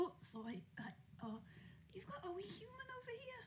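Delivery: put-on soft, unvoiced, drunken whisper, apologetic.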